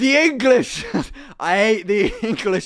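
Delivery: put-on loud, drawn-out drunk Irish man's voice, words dragged. Retelling what a drunk irish man said at the table: imitating a drunk irish man. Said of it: "obviously drunk".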